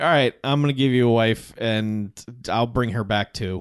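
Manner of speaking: plain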